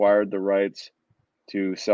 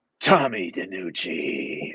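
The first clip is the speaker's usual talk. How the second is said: menacing horror villain voice; 3 semitones lower than usual. Retelling how a man he bumped into greeted him by name, Freddy Krueger voice. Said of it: "his like classic like Freddy Krueger voice".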